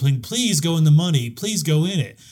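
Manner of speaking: acted, desperate mock pleading. Describing two contestants on their knees before the wall: imitating someone begging. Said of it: "falling on their knees ... and begging".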